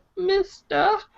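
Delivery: put-on tiny, squeaky, very high-pitched little girl voice. Mocking a voice actor's attempt at a little girl voice: imitating a voice actor's little girl voice. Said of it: "His little girl voice is like".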